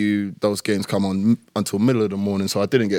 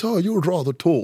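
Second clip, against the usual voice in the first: put-on posh royal voice, pitched higher; 9 semitones higher than usual. Retelling what the king said when they met: imitating the king's accent. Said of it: "Do the accent?".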